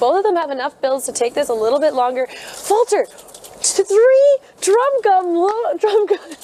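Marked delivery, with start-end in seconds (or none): 3.6-6.2 high, slow stammering, flabbergasted and lost for words. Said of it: "Sorry, I'm at a loss of words right now".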